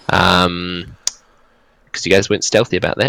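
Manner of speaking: normal talking voice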